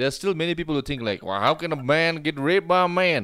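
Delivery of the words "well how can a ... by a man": put-on hillbilly drawl, loud and slow. Voicing what many people think, in a put-on hillbilly accent. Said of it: "I made a hillbilly accent".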